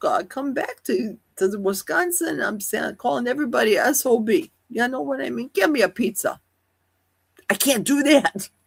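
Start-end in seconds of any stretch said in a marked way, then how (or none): 5.5-6.4 put-on New York accent. Speaker shows how they pick up accents on vacation, in a New York accent. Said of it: "I start talking like a New Yorker".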